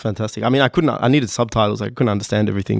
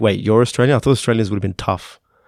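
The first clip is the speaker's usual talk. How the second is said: ordinary delivery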